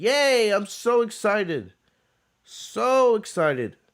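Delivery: insincere, very drawn-out, high sarcastic gushing. Reacting to news about Monday Night Raw, with sarcastic fake excitement. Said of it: "I'm bullshitting you guys in in my voice".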